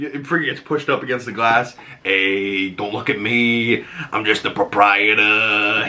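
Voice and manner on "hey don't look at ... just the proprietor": comic-book mob-boss character voice. Quoting him pushed against the glass: Penguin voice. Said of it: "it's got such a good voice".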